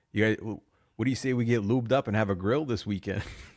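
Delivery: failed, botched attempt at Minnesota accent. Describing a man who went logging for burls, quoting him, attempted Minnesota accent. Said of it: "I can't do the accent to Minnesota".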